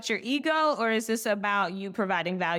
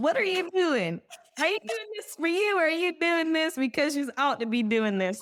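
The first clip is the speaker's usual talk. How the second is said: preachy, scolding Southern granny voice; 8 semitones higher than usual. Mid-conversation, the speaker lets her inner Southern granny come out: Southern granny voice. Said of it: "the like Southern granny just coming out".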